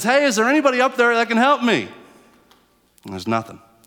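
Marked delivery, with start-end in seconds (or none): 0.0-1.9 high-pitched loud call. Telling a story of a man stuck below a cliff, act out him calling out. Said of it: "he calls out".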